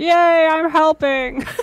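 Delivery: silly, chirpy, cheering cartoon sidekick voice. Retelling a cartoon scene after being asked to do the character's voice: Zoidberg voice. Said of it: "I just remember Zoidberg just being like".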